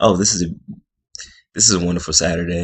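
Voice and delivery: sarcastic, snide delivery. Quoting a remark the speaker can't stand hearing; mock-sarcastic. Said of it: "she was like being sarcastic".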